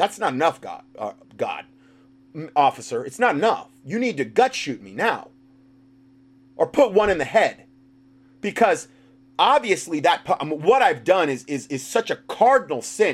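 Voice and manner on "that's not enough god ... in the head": ordinary delivery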